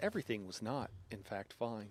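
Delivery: put-on narrator voice. Playing a game while under attack, commenting on it: narrator voice. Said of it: "Narrator voice".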